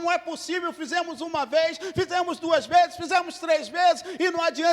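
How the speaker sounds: furious, raging ranting shout, complaints piled up. Retelling a raging man with his servants, mock shouting. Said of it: "ele gritando".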